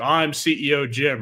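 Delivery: plain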